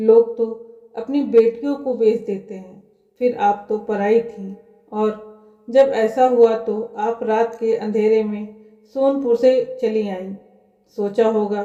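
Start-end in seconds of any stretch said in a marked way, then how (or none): none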